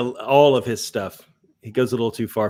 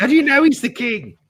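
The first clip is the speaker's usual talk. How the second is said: put-on screeching, screechy English accent at very high pitch; 13 semitones higher, 3 dB louder than usual. Showing how to do an English accent: screechy Monty Python English accent. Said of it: "to do a Monty Python English accent, you kinda have to screech".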